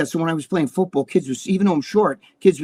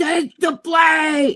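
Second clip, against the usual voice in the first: put-on very high screamed call, stretched and drawn out; 12 semitones higher than usual. Retelling a chaotic game moment, quoting someone; retelling a scream.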